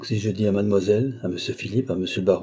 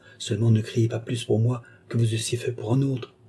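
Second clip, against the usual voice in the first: usual speaking voice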